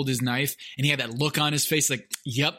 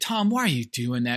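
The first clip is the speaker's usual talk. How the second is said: mock patronizing, condescending, talking-down tone. Retelling an older brother's remark at ping pong: imitating a condescending tone. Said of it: "Very condescending".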